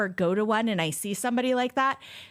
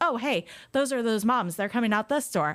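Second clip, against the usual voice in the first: put-on casual, blasé voice; 2 semitones higher than usual. Retelling paid protesters waving after clocking out: imitating blasé protesters. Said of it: "they're so blasé about it".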